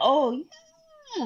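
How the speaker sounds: voice jumping up very high. Retelling a man's reply in a scene: imitating his voice going high. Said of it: "And his voice goes high".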